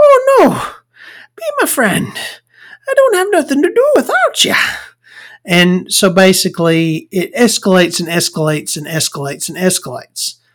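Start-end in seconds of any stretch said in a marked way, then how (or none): 0.0-4.5 very high-pitched put-on Irish accent. Retelling a movie scene as the friend: Irish accent. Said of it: "I can do an Irish accent".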